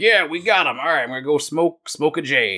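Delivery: swaggering, cocky, smug, self-satisfied delivery. Retelling a movie scene about a character, imitating a cocky voice. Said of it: "'Cause he's all cocky".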